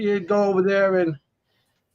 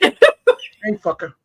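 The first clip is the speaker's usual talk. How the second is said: high, squawking parrot voice. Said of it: "calls me a fucker".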